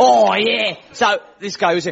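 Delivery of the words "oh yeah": put-on Essex accent, higher. Trying out an Essex accent before quoting a guy from a TV show: Essex accent. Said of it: "I've got to get the accent".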